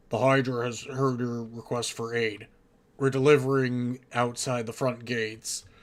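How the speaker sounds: loud, deep, distorted transmission voice. A message comes through the party's Vox units, distorted deep voice. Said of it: "distorted and deep voice".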